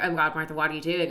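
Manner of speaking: normal talking voice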